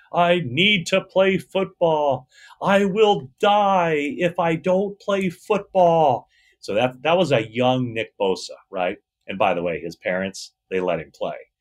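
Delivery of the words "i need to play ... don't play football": put-on very high, drawn-out, full-lung childlike tantrum yell. Retelling a young Nick Bosa's kitchen tantrum: imitating a child yelling at full volume. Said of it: "he's yelling at the top of his lungs".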